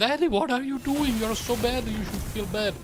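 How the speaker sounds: high-pitched, mocking little-girl voice.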